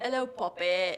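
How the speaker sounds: put-on British accent. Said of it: "Do your, um, English one".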